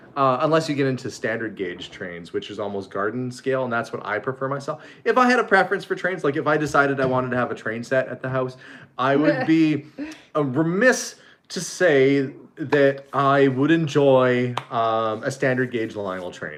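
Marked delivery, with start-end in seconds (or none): none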